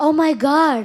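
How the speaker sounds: very loud, amazed, astonished outburst. Performing a phrase on request: surprised. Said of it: "ஆச்சரியமா சொல்லு".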